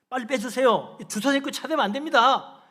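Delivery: angry, annoyed, irritated, high and very loud. Retelling own past words to a driver parked in the lot, imitating an angry, annoyed tone. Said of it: "정말 좀 화난 어조로 짜증스럽게".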